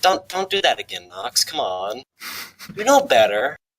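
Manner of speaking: condescending, patronizing, scolding tone. Speaking in character to knox while rubbing his head: condescending. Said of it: "like, condescendingly, and I'm like".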